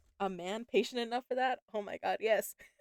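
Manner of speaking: cracking up, laughing through the words. Commenting on a story about edging, laughing. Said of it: "I'm sorry, I couldn't help it".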